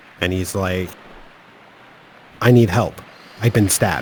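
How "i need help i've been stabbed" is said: put-on, very faint voice. Retelling a 911 call from a caller who was stabbed: imitating very faint speech. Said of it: "he's talking very faintly".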